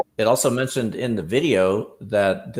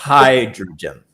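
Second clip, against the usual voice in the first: hydrogen with first syllable hy- leaned on; 7 dB louder than usual. Correcting how hydrogen is pronounced: stress on HY in hydrogen. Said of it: "the emphasis is on the first syllable".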